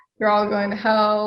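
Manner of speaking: usual speaking voice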